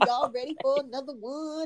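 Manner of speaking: put-on voice of another woman. Showing how she said the line, imitating Nikki's voice. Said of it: "That's how she did it".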